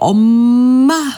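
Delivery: put-on loud baby babble.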